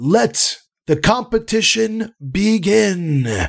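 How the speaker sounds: very high, loud, booming arena announcer call. Narrator voicing an unseen announcer before a crowd, loud booming voice. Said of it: "with a loud booming".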